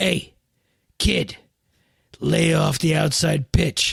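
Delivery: deep, low, throaty put-on tough-guy voice. Retelling what a hulking guy in a parking lot said, deep throaty guy voice. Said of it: "kind of like this deep throatish kind of guy".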